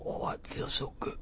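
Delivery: feeble, sick man's whisper. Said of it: "He was like".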